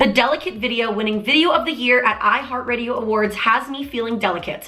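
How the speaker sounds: ordinary delivery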